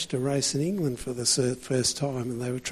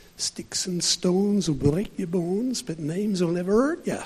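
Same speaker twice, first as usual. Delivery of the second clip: imitated Manchester English accent; 4 semitones higher than usual. Speaker quotes a saying of old Lillian Dempsey, in Lillian Dempsey's Manchester accent. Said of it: "in her English Manchester accent".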